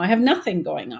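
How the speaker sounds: ordinary talk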